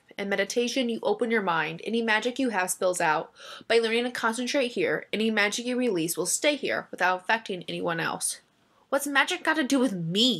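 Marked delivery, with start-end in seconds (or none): 8.9-10.4 blunt, demanding, pointed, challenging tone. During a lesson on meditation and magic, Briar demands an answer. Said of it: "Demanded Briar".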